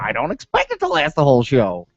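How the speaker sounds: silly, swooping, bouncy felt-puppet character voice. Repeating the previous line about the show, in a Muppet voice. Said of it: "That's my Muppet voice".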